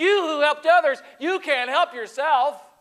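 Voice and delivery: put-on scornful sneer, very high and loud. Retelling the crucifixion as the high priest Caiaphas looks up at Jesus, sneering. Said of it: "he looks up at Jesus and he sneers".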